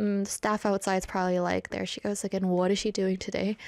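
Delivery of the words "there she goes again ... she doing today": ordinary talk, nothing marked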